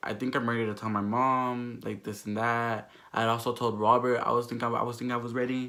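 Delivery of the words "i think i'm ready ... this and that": ordinary delivery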